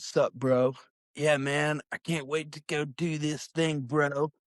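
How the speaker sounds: laid-back, dudely bro-speak voice. Retelling how she talked while they made videos, in Tatum's bro voice. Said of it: "the entire time she was like".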